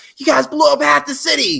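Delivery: put-on, very high-pitched, angry police-chief yelling. Retelling a scene outside an office, the speaker acts out Tony Khan yelling like a police chief. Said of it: "yelling at him like the police chief".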